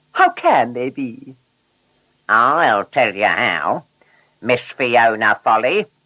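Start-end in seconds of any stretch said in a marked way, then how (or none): 2.3-5.9 ominous, menacing, threatening tone. A story character confronting a new car about her tyres, menacing tone. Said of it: "Bert said in a menacing tone".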